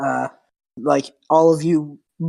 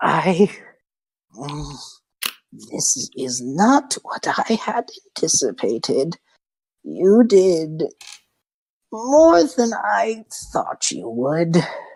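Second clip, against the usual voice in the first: slow, drawn-out, swooping hag voice. Voicing a hag speaking to the adventurers: hag's voice. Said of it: "so it looks over to you guys and says".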